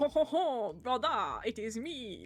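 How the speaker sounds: imitated poor French accent. Retelling a play scene where a character appears: imitating a really bad French accent. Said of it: "trying to put on a really bad, like, he, it's a really bad French".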